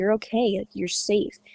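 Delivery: plain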